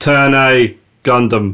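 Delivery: slow, drawn-out, announcer-style title callout. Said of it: "You want me to go next?".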